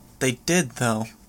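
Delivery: ordinary delivery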